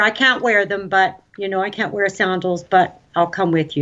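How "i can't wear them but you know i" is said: ordinary delivery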